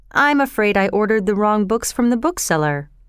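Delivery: plain reading voice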